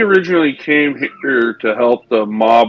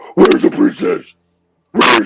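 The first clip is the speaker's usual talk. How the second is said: rough growl, pitched up high; 8 semitones higher than usual. Player voicing his character after slapping a flask from someone's hand, Batman impression. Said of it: "Do my best Batman impression".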